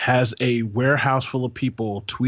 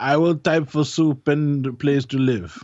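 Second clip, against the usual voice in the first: horrible, bad, fake put-on Russian accent; 3 semitones higher than usual. Joking with a co-host about underpaid Russian workers, horrible Russian accent. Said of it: "That was a horrible Russian accent".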